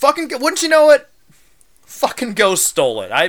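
angry rant, high pitch swinging up and down. Apologizing to Grandma about the lost Christmas sweater, angry. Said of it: "I'm just so pissed off right now".

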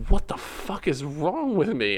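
high, slow, bewildered, exasperated outburst.

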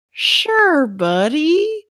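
odd, high plant-creature voice, "buddy" stretched. Put on the spot, the speaker answers someone in a plant voice. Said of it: "I have to come up with a plant voice".

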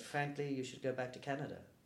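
normal talking voice

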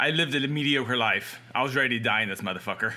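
ordinary talk, nothing marked

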